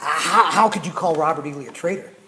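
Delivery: angry and loud. Retelling a lecture where a student questioned calling lee a traitor: imitating an angry student. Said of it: "so angry he was quivering".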